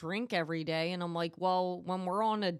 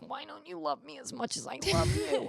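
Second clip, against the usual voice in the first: put-on drunk pleading whine, high, creaky, rough-edged; 9 semitones higher than usual. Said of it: "her being drunk as shit, just being like".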